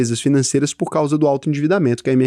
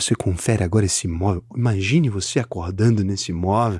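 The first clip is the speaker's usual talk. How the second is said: low, smooth, silky, velvety voice; 6 semitones lower, 4 dB quieter than usual. Telling real estate agents who will be at the event, imitate Ricardo Martins's velvety voice. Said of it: "fala com uma voz aveludada".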